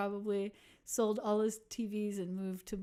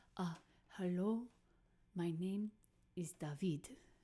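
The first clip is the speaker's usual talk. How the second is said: very bad put-on Spanish accent; 5 dB quieter than usual. Retelling a man who came up to them at the festival's end, bad spanish accent. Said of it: "I'm going to do a very terrible Spanish accent now".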